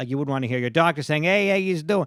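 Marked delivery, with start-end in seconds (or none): 1.2-2.1 put-on New York accent. Illustrating a joke about a doctor greeting you in a New York accent. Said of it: "the New York accent".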